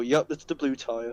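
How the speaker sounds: put-on slow, sarcastic, throwaway tone. Retelling own advice about the wet tires: imitating own sarcastic remark. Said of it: "barely register sarcasm".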